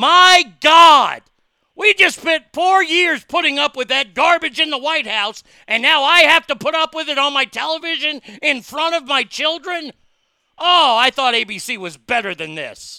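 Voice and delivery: booming, shrill, very loud, high-pitched outraged rant. Acting out an outraged TV viewer complaining to the network, mock-angry Democrat rant. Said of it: "I sounded like an angry Democrat right there".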